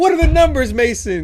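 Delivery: loud, high, interrogator-style tone.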